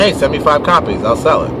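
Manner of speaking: ordinary talk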